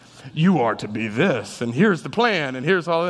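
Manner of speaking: heavenly voice, sounding as if from above. Speaker imagining God coming in a dream to lay out a plan, imagined voice of God. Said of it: "That's just how I picture how he would talk".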